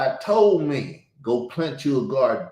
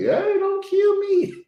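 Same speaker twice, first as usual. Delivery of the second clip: put-on very high, slow, baby-like crying plea. Acting out a goat about to be slaughtered: imitating a crying goat. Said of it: "crying like he a baby".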